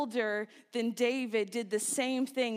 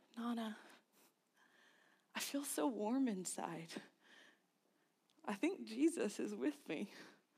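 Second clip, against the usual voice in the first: hushed, barely-there, very quiet confiding whisper; 10 dB quieter than usual. Retelling what was whispered to nana after praying: retelling a whisper. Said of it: "I leaned over to my nana and I whispered".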